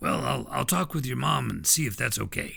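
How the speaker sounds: gritty, grainy, gravelly, rough voice. Retelling a music teacher's promise to call his mom: Missus Green gravelly voice. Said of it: "a voice that was pretty gravelly".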